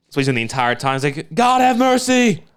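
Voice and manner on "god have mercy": very high-pitched, pleading, begging tone. Retelling a trailer scene, imitating Pierce Brosnan pleading: Pierce Brosnan impression. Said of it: "a pretty solid, uh, Pierce Brosnan".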